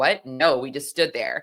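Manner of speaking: mock sarcastic delivery. Retelling an officer's testimony: imitating a sarcastic officer. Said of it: "he was very sarcastic in this moment".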